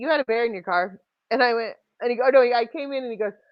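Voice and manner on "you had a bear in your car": normal talking voice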